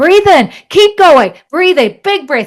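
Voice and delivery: very loud, driving, energetic coaching voice. Showing a breath work cue meant to make people feel activated, energetic, activating voice. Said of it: "because I want them to feel activated".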